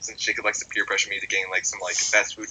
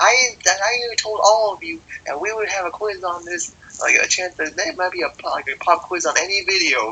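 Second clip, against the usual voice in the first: very high-pitched, whiny, whining voice; 9 semitones higher, 5 dB louder than usual. A student retells the teacher complaining to the class about a quiz: imitating a high-pitched whine. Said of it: "complaining in like a high pitched whine voice".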